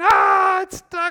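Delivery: put-on shrill, very high, very loud child scream. A dad retelling his son getting stuck in a t-shirt, imitating Micah screaming. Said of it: "he starts screaming".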